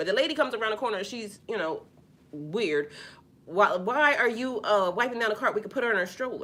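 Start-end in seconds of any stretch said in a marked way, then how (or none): 3.5-6.4 mock nasty-toned voice. Retelling what a lady asked a man at the cart: imitating a nasty tone. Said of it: "why she got that tone with him?".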